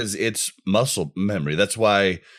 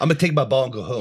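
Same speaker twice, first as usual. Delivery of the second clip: mock cocky, boastful child voice, higher pitch; 5 semitones higher than usual. Joining in mocking a player as a cocky kid: imitating an overly cocky kid. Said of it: "that overly cocky kid on the playground".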